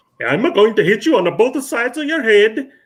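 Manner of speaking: very high, loud, gravelly Swedish accent. Imitating the Swedish man they were describing, in a gravelly Swedish accent. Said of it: "but in a more gravelly".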